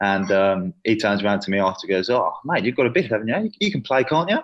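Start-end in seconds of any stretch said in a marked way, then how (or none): 2.1-4.4 put-on Australian accent, pitched up. Quoting his mate after they played together: Max's Australian accent. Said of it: "That's my best Australian accent right there".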